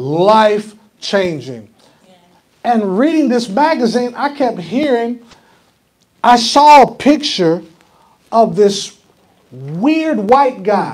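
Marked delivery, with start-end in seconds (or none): 0.0-1.7 life-changing stretched out slow.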